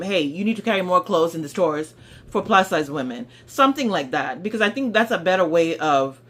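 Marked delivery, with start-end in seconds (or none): none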